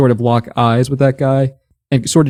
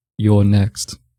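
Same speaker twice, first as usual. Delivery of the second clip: eerily composed, unsettlingly calm, chilling; 4 semitones lower than usual. A player's character, locking eyes with a foe, speaks in an unsettlingly calm voice. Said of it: "In a a like unsettlingly calm voice".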